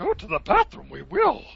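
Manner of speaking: very high put-on character voice. Dad heading into the bathroom with his kids: Yoda voice. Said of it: "So I did my Yoda voice".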